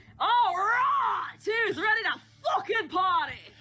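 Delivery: sudden hyped shout, high and loud.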